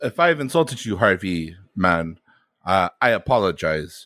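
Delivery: heavy, strong, laid-on Eastern European accent. Apologizing to Harvey Mann in an improv scene: strong Eastern European accent. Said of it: "there's that accent really coming out now".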